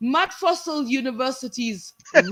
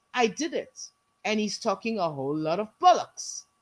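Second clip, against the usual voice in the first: ordinary talk, nothing marked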